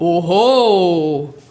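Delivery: loud, powerful, drawn-out chest-voice "oho". Demonstrating chest voice on the vowel O, strong chest voice on Oho. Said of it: "ich mache dir vor, etwas in Bruststimme auf O".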